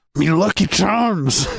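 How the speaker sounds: poor put-on Scottish accent. Trying a Scottish accent one more time after failed attempts, bad Scottish accent. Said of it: "I didn't get any better".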